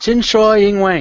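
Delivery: poorly done Mandarin accent. Asked to say it again, repeating a chinese phrase, very bad accent. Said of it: "it was with a very bad accent".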